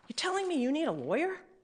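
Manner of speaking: quick, hushed, pressing delivery, rushed out soft and pointed. You show the tone a detective took about asking for a lawyer, imitating Detective Mulhern. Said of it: "giving us what Detective Mulhern sounded like? Yes, I am".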